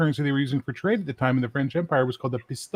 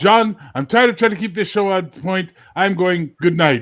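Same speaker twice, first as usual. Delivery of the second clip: loud, angry, fed-up voice; 4 semitones higher, 6 dB louder than usual. Retelling how another speaker rage quit a show: imitating someone angrily quitting. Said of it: "rage quit one of his shows".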